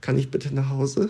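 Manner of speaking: acted-out humble, meek tone. Retelling asking a young policewoman in the cell to go home; retelling a humble plea. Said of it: "ich so ganz demütig".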